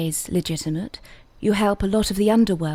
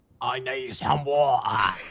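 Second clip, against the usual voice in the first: gravelly heavy-smoker voice, less posh; 7 semitones lower, 3 dB quieter than usual. Told to give it another go, you say it in a lower, less posh voice. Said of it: "forty a day, lower".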